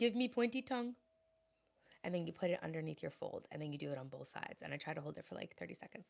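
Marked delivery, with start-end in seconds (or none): 0.0-0.9 put-on Indian accent, pitched up. Quoting an indian lady's instruction for tightening the neck, in an indian accent. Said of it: "Is it racist if I do an Indian accent?".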